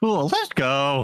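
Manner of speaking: high voice breaking and cracking mid-word. A game master voices a character sending the players off, voice cracking. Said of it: "With that voice crack and everything".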